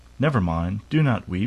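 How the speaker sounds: plain reading voice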